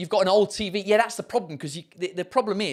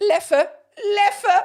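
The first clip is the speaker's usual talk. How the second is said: German accent, pitched up and loud; 6 dB louder than usual. Speaker names a belgian beer, in a german accent. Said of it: "I'm saying that in a German accent".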